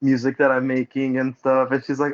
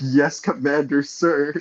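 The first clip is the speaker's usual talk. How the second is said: mock flamboyant, put-on voice. Retelling his answer to a guy's send-off, mock-gaily delivered reply. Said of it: "You said that so gaily".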